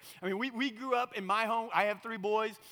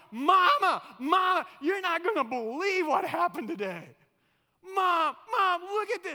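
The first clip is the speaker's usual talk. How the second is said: put-on little boy voice, high, loud, excited yelling. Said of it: "he starts yelling".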